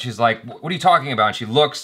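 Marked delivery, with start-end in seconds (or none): 0.4-1.3 acted-out cross, put-out, annoyed, mad tone. Retelling a complaint to a waitress: imitating an angry waitress. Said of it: "she's mad".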